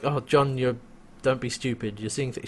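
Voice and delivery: normal talking voice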